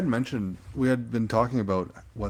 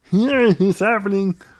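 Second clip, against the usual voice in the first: froggy puppet voice, higher and louder; 12 semitones higher, 10 dB louder than usual. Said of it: "it's Kermit for sure".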